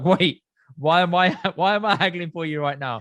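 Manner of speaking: slow, baffled, confused tone. Retelling being handed the phone by his dad, imitating his own past protest. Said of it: "And I'm like".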